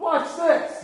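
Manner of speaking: high, cocky show-off tone, tossed off lightly.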